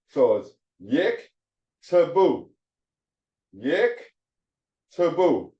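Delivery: "yik to boo" sounded out slowly. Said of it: "The first one, yik, the first sawa is your syllable divider".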